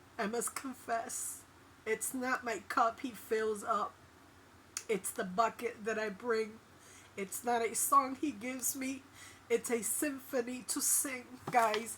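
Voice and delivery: tearful voice, crying through the words. Speaking to viewers about God's love: crying while speaking. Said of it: "I didn't mean to cry".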